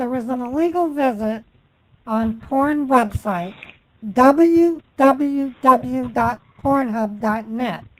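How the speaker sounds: very slow, deliberate, carefully clear delivery. Showing another speaker how the sentence should be said: slowed-down delivery. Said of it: "This is how you should say this".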